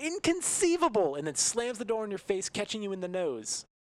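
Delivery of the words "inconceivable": put-on screaming man voice, higher and louder. Voicing a man who slams a door on a player: screaming as Wallace Shawn. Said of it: "he screams".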